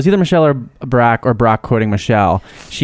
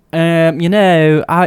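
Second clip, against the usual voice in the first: failed, faltering, very slow, high Southern drawl; 5 semitones higher than usual. Retelling what a waitress said at a restaurant: imitating a waitress in Southern accent. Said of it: "I tried to do a Southern accent".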